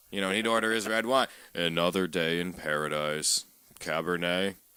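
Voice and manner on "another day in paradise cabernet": low, slow, flat, unvarying monotone. Retelling how a regular bar customer always ordered his drink, imitating a monotone voice. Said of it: "just all monotone".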